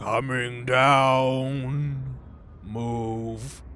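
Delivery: echoing, drawn-out voice from above, falling downward. A game master voices an unseen figure calling down to the party: echoing voice from above. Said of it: "this echoing voice from up above".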